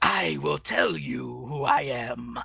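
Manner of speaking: very slow, drawn-out, creaky fortune-teller voice. Retelling a cartoon scene with a detective: Stormer's fortune teller voice. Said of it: "the fortune teller voice".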